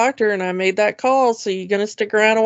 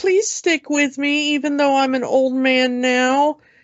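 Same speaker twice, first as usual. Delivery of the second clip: put-on begging plea, higher pitched; 4 semitones higher than usual. Retelling a scene where the actor asks the audience to stay: imitating Matt Smith begging. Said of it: "Begging the audience".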